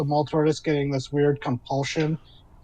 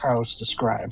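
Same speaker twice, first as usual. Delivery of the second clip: usual speaking voice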